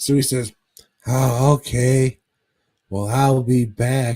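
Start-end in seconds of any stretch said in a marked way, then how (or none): 1.1-4.2 put-on lispy old-man voice, louder, slower. Retelling a story, the speaker voices the old man's reply: imitating a lispy old man. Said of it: "this lispy old fuck".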